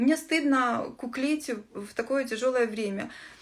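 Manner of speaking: ordinary talk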